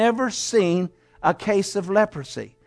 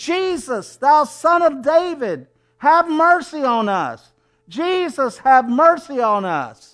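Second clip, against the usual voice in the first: mock desperate, high, drawn-out begging cry; 5 semitones higher than usual. Preaching, the speaker acts out a crowd screaming to jesus from far away; retelling a scream for mercy. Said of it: "And they're screaming".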